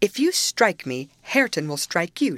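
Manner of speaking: plain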